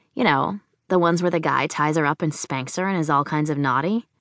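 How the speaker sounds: plain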